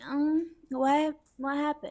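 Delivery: dazed, high, sleepy, confused, just-woken voice. Reenacting dad woken from deep sleep: imitating dad just woken up. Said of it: "having the best sleep of his life".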